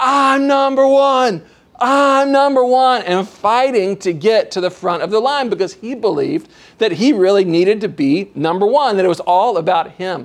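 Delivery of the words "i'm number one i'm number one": high, drawn-out, crazed wild yelling. Recalling a kid fighting to get to the front of the line, retelling a kid's crazy yelling. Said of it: "began just to go crazy yelling".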